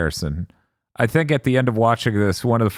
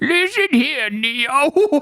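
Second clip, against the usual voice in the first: very high, exaggerated elderly voice, one word stretched. Suggesting how a character ought to talk, caricature of an old person. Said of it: "sounding like a caricature of an old person".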